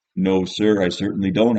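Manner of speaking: plain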